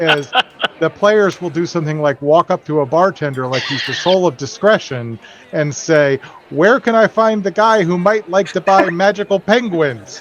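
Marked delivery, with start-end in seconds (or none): 6.5-10.2 loud, carrying, raised voice, pitched up. Acting out a game player asking a bartender, in a loud voice. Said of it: "In a loud voice".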